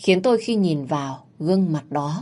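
ordinary delivery

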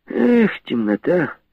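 very high-pitched, openly mocking voice. Laying cartridges out before another man, the narrator answers his reply, openly mocking. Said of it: "Уже с откровенной насмешкой говорю я".

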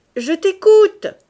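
very loud, very high shouted call. Narrator reading a character's line called out to the narrator, cried out. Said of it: "m'a crié Landriot".

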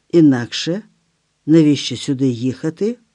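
plain reading voice

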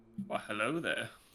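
put-on wise old mentor voice. Greeting Adam at the start of the show with an Obi-Wan Kenobi impression. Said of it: "that was my attempt at a Obi-Wan Kenobi catchphrase".

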